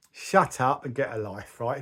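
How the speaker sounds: ordinary delivery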